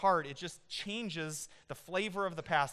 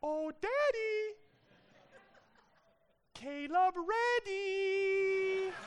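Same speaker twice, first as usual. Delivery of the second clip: put-on tiny, very high, slow, squeaky child voice; 13 semitones higher than usual. Imitating a little voice exactly, in a high-pitched squeaky voice. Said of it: "a little high-pitched squeaky voice that goes, ... It's exactly like this".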